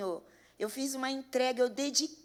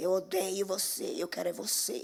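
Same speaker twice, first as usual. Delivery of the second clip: put-on horrible, possessed demon voice, lower; 5 semitones lower than usual. Retelling what a possessed family member said: imitating a horrible possessed voice. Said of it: "com aquela voz horrorosa".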